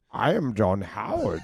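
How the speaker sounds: slow, deliberate character voice, every word placed. Asked for an impression, answering in a John Howard voice. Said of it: "Can you do a John Howard impression?".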